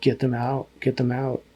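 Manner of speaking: ordinary talk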